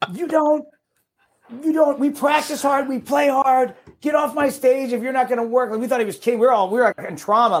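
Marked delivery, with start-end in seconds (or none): 0.1-5.7 mock-screaming, much higher. Retelling a performer screaming at a side guy on stage, retelling a scream. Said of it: "he just starts screaming at this guy".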